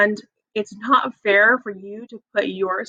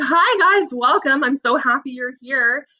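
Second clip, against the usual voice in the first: put-on smiling voice, higher; 5 semitones higher than usual. A teacher acts out greeting students on the first day, retelling a smiling greeting. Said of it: "my students they see me smiling".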